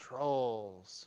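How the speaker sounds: very quiet, low, hushed whisper. A character looks at the creatures, pauses, and whispers to the group: whispering. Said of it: "pauses and whispers to you all".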